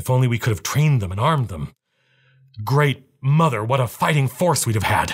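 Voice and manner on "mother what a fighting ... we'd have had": ordinary delivery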